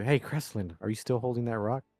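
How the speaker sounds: whispered in a hushed voice. In a role-play, speaking to cresseline, in a whisper. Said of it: "I kind of like whisper to you".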